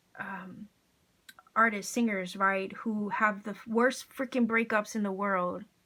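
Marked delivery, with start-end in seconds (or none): none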